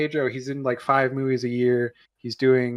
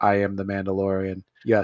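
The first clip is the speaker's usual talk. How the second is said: flat put-on monotone, lower pitch, slower pace; 5 semitones lower than usual. Mocking a phoned-in performance in a show, flat Mandalorian monotone. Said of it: "a very flat, unemotional".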